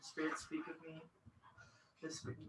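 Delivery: whispering to oneself. Voicing a character who whispers to themselves: whisper. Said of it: "I'm going to try and whisper to myself".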